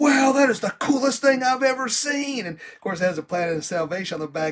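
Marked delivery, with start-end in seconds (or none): 0.0-2.4 thrilled gush, very high, loud, excited. Retelling handing a young lady a poker chip, speaker is imitating someone excited. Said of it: "she was all excited".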